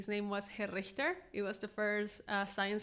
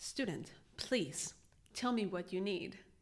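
grand, ceremonious, theatrical cartoon-villain delivery. Imitating how she answered students who raised a hand, imitating a Disney-villain voice. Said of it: "sounds like a Disney villain".

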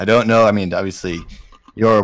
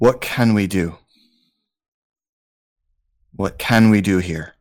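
theatrical stage whisper. A game master voices a character calling to a companion, in a stage whisper. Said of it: "Barrick says in a stage whisper".

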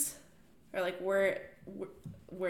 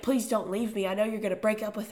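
mock desperate begging voice; 3 dB louder than usual. Retelling a book character begging at her knees: mock begging. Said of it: "begging at her knees".

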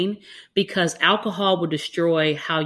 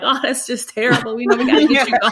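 mock tearful sympathetic voice, higher and louder; 7 semitones higher, 5 dB louder than usual. Retelling comforting a crying patient as a medical student: imitating crying with sympathy. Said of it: "You're crying with them".

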